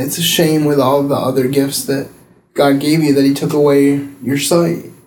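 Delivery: ordinary delivery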